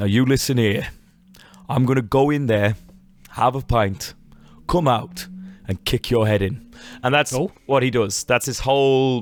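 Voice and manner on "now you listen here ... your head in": put-on real, steady Birmingham accent, held even. Describing a Peaky Blinders character, the speaker shows how he talks: steady Thomas Shelby voice. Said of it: "he's got a real steady voice".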